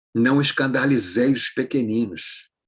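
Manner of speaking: plain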